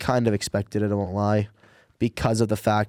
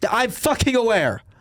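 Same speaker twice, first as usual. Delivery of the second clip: very high, irritated, annoyed yell; 13 semitones higher than usual. Answering a remark about keeping a former goalie: yelling in annoyance. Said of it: "you don't need to yell at me".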